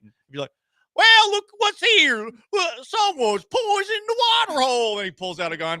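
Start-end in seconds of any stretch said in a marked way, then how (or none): 0.9-5.0 put-on Texan accent, very high and raised. Imagining someone impersonating a Texan in a fight: mock Texan accent. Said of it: "him impersonating a Texas person in a fight".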